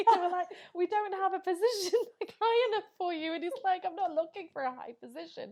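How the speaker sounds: giggling through the words. Telling a funny story to friends, laughing while talking, voice gone high-pitched. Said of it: "I've gone, like, ultrasonic now".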